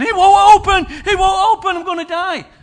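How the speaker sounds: very high, very loud panicked screaming. Retelling a woman who couldn't open a door and had a meltdown, imitating her panicked screaming. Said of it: "she starts screaming".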